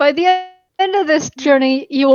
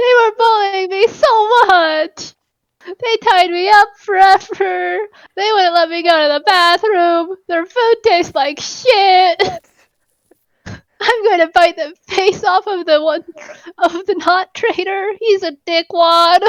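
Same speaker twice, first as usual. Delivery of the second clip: overdramatic, over-the-top, high-pitched whining; 5 semitones higher than usual. A captive character telepathically complains to the captain, overdramatic whining. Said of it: "very overdramatically start whining with psychic whispers".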